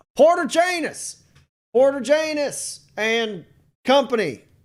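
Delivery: loud, high-pitched calling voice. Narrator voices someone calling into town for the company, calling out loudly. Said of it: "a voice calling out loudly into town".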